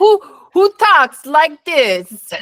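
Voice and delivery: bad fake Italian accent, high, slow.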